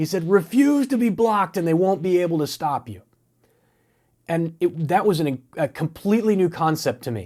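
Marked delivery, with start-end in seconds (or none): 0.3-3.0 mock, high, yelling, screaming coach voice. Retelling a man in a team huddle screaming at someone, imitating a man screaming. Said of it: "he's screaming at him over the crowd".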